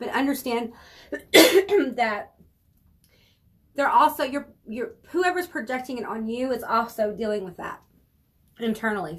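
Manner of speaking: voice catching, choked up, near tears. Speaker talking to listeners, choked up. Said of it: "I'm choking up".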